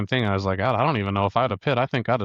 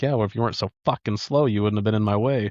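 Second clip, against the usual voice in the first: mock self-satisfied tone. Imitating a rival driver with a smug face, retelling his comeback: imitating Steven's smug retort. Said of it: "that little smug face".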